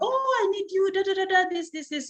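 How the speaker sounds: high, needy, pleading voice.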